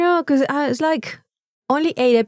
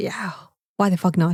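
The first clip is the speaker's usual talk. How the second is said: mock angry tipsy voice, lower and quieter; 6 semitones lower, 5 dB quieter than usual. Retelling what mum said after a couple of drinks: imitating angry tipsy mum. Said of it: "she was a bit angry, and, and she was like".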